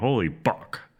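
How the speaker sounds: put-on exclamatory outburst. Retelling how characters react to a name: imitating a swear-like exclamation. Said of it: "they always say it like an, a fuck exclamation".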